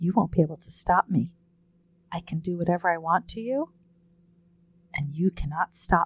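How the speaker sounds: menacing psychopathic whisper. Demonstrating what to whisper into an immobilized person's ear, evil psychopath whisper. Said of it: "you kind of sound like an evil psychopath".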